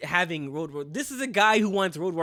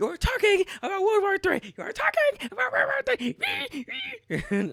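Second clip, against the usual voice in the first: put-on very high, swooping, childish yelling. Retelling a clip, the speaker mimics how he said it: imitating childish yelling. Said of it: "he's just yelling it like a child".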